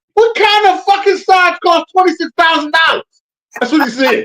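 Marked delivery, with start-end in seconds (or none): 0.1-3.0 put-on outraged fatherly voice, higher and louder. Retelling a movie scene, imitating the dad from Wolf of Wall Street. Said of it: "I sound like the dad from, uh, Wolf of Wall Street".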